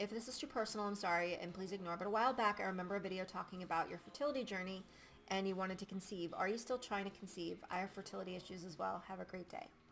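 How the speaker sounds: normal talking voice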